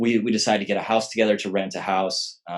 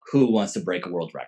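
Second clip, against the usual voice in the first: normal talking voice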